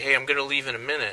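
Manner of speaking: usual speaking voice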